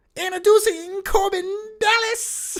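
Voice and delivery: very high, shrill, pushed-up voice. Doing a Fifth Element line as a joke: Chris Tucker impression. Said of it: "my Chris, Chris Tucker impression".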